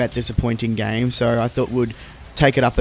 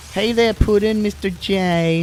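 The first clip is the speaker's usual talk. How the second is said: put-on Brooklyn accent, higher pitch, slower pace; 9 semitones higher than usual. Speaker describes an Australian actress slipping in and out of accents: Harley Quinn Brooklyn accent. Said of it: "the Harley Quinn Brooklyn accent".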